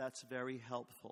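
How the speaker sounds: mock sarcastic delivery. Retelling own reply to advice at a meeting: retelling a sarcastic remark. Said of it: "Which is sarcasm".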